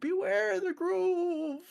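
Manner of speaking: said in a very high pitch. Joking about a character's reaction, as the old man from Emperor's New Groove. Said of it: "Like the old man from Emperor's, Emperor's New Groove".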